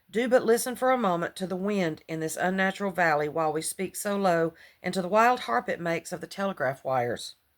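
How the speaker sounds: ordinary delivery, nothing marked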